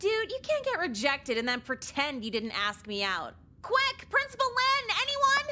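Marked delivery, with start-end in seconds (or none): 3.6-5.5 shrill, very high, screamed cry. Calling out after being asked out by the counselor: screaming for help. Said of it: "why are you screaming?".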